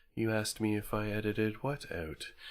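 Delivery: hushed, very quiet, droning monotone. Voicing a professor character in a game: droning monotone voice. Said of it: "his voice just kind of drones. It's very monotone".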